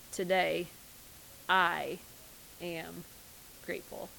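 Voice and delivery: slow, deliberate, word by word with gaps. Reading aloud a line they once wrote, slow, pausing after each word. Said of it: "said slowly and with thought, pausing after each one".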